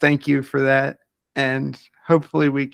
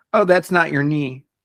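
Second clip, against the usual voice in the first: mock dry, matter-of-fact deadpan delivery, no wink. A patient retells what doctor Novacek said to him, imitating Novacek's deadpan humor. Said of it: "in his deadpan dumb humor".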